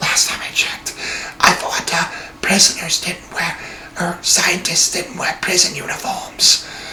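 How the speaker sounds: very quiet, breathy, hushed whispered character voice. Retelling a story, voicing Tucker's reply to Edward, in Tucker's whispering voice. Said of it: "sorry if I'm whispering like that".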